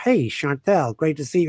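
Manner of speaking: mocking, fake, put-on American accent. Mimicking a Brit back from L.A., in a fake American accent. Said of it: "What are you talking like that for?".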